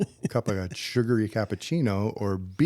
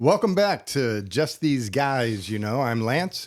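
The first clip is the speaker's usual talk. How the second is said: put-on lounge lizard show-host voice. Co-host welcoming listeners back to the show, in a lounge lizard voice. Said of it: "why do I adopt a lounge suit lizard voice".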